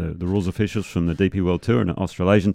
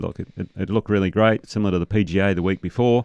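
ordinary talk, nothing marked

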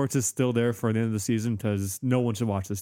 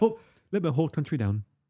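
put-on posh accent, pitched higher; 5 semitones higher than usual. Retelling a fake internal monologue video: posh accent as Rob Green. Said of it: "it's really posh accent".

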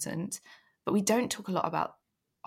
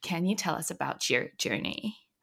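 embarrassing, fake put-on American accent. Asking a guest to tell us about their journey in an embarrassing american accent. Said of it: "I'm going to use the embarrassing American accent".

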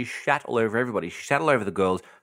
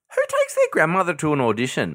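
furious, high, swooping indignant outrage; 8 semitones higher, 5 dB louder than usual. Ranting about someone bringing a grandmother to an audition: furious high-pitched voice. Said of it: "my voice has went up seven octaves".

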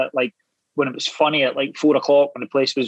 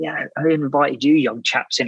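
acted condescending, lordly, patronising tone. Retelling how a hanger-on spoke to two newcomers: imitating a condescending remark. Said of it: "very condescendingly come up to the two of us and said".

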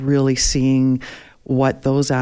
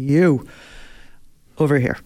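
put-on speech with a Russian accent. Retelling being stopped by a man over a missing passport: russian accent. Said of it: "That's not a bad accent".

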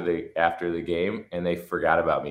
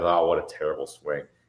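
put-on muttering under breath. Retelling what the first base coach said: imitating someone muttering under breath. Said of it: "He'd be talking under his breath".

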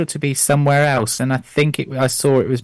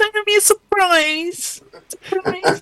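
voice shooting very high, pitched up. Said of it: "how high my voice went".

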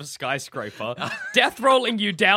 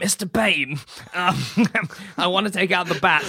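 put-on miserly voice with impeded speech. Acting out a plotter approaching Bane: put-on miser voice with speech impediment. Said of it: "a miser with a shitty speech impediment wringing my hands".

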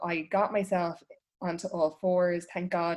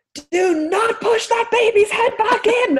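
piercing, shrill scream, very high and loud; 13 dB louder than usual. Recounting a paramedic supporting the baby's head during the birth, retelling a scream. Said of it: "I was screaming at them".

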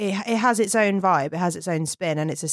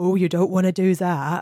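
slow put-on West Country accent; 3 dB louder than usual. Quoting a line from a film: West Country accent. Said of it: "for some reason in a West Country accent".

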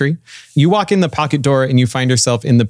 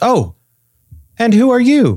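put-on very high, swooping, sing-song little girl voice; 10 semitones higher than usual. Voicing a little girl who catches a sneaking player: little girl voice. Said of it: "a little girl sticks her head out the door and she goes".

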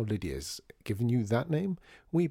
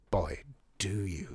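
appreciative and admiring, quieter; 4 semitones lower, 4 dB quieter than usual. Watching another man prepare his coffee, he remarks: appreciatively. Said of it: "said artie appreciatively".

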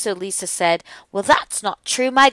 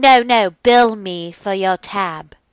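slow, carefully put-on English accent; 4 dB louder than usual. Retelling what a woman said to them: put-on English accent. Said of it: "That was my English accent".

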